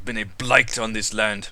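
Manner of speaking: whispering angrily. Voicing Azaka, who asks the party how they feel: angry whisper. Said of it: "She just whispers this angrily".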